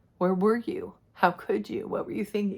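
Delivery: voice straining to hold back tears. Speaking of the questions asked over the last couple of years, holding back tears. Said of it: "I'm trying so hard not to get emotional".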